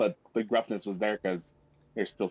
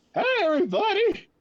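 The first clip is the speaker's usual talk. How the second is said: ragged, shredded, very high and raised voice; 5 dB louder than usual. Imitating how Anthony spoke back in the day: Anthony's old shredded voice. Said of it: "This was how Anthony spoke back in the day!".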